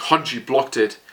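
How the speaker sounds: ordinary talk, nothing marked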